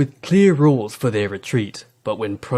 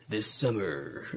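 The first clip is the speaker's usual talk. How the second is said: very soft, hushed movie-trailer narrator voice; 13 dB quieter than usual. Reading a description aloud for a guessing game, asked to use movie voice; movie trailer voice. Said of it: "I want movie voice".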